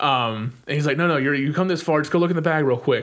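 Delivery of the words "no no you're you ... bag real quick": usual speaking voice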